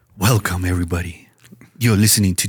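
silky smooth delivery. Host takes a dare and welcomes everybody in a smooth voice. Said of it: "I'll do it in smooth voice".

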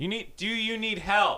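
slow, high-pitched yelling. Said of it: "She's like".

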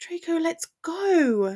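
pleading groan, drawn-out go. Narrator reads a woman struggling against Draco's grip, groaning. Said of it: "she groaned".

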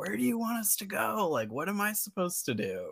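mock exasperated shout, pitched very high. Telling of a man yelling about parking, retelling own yelling back. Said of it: "i started yelling back and".

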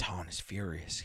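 whispering. He drags a man away from the window and whispers a warning. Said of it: "he whispered".

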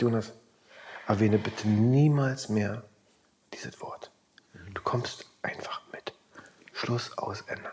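soft, hushed whisper under the breath. Retelling what another person told him, whispering. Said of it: "Warum flüsterst du jetzt?".

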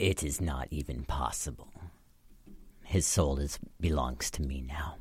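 whispered villain voice. A game master voices a necromancer whispering back to the players. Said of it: "But you guys see [name], the necromancer dude, and he looks like he's charging up a spell. / and he whispers back".

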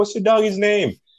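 put-on very high-pitched little baby-talk voice. Retelling how a lady asked about the speaker's dog, in a little baby voice. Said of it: "did the little baby voice".

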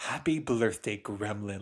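joyful, confident delivery. Praising a character's line delivery, imitating Jenna Maroney, happy and confident. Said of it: "she just says so happy and confidently".

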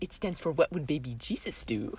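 very soft, breathy, almost whispered voice. Asked to say the line as Shirley would. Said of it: "Say that".

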